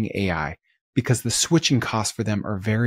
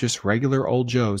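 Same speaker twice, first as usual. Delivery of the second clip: ordinary delivery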